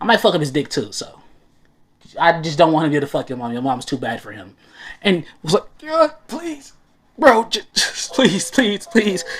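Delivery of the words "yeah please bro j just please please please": mock tearful, crying, pleading voice. Retelling a video scene, voicing a begging character: imitating someone crying while begging. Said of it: "Don't start crying, man".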